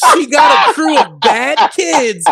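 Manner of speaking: emphatic, punchy delivery.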